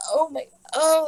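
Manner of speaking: high, loud voice right on the edge of crying. Retelling having painful contractions and being unable to breathe: imitating own near-crying. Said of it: "crying almost".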